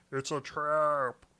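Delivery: booming commander-like loud cry, "trap" stretched long. Showing the voice you went for when screaming the line, do an Admiral Ackbar voice. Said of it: "that's kind of the voice I went for".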